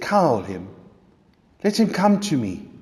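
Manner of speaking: tender, soft, gentle calling voice. Retelling a scene to the listener, voicing the one who calls them over, in a soft, gentle voice. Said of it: "You hear the most soft, gentle voice".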